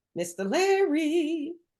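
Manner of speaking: slow, drawn-out singsong calling voice.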